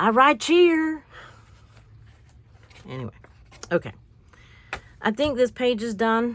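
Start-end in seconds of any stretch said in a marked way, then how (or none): 0.0-1.0 put-on very high, loud, broad country Southern accent. Speaker quotes what a man said, in his very country southern accent. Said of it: "in his very country southern accent".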